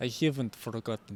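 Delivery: Bulgarian, Eastern European accent. Trying out accents in a conversation, doing a Bulgarian accent. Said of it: "It's Bulgarian".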